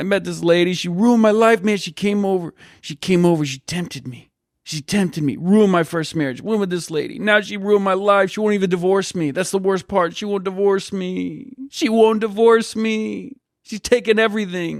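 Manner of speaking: acted, high, weepy, tearful sobbing voice. Retelling a driver's story as he starts crying: imitating someone crying. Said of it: "Starts crying".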